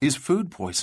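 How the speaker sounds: ordinary delivery, nothing marked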